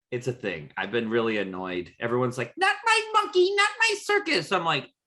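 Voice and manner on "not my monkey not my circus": put-on very high-pitched, squeaky, dumb-sounding kid voice. Mocking people who keep repeating a phrase: imitating a stupid kid voice. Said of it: "Don't use a stupid ass kid voice".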